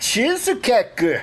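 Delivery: botched French accent, very high and loud. Listing the food that arrived, with a bad French accent. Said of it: "that's not a French accent".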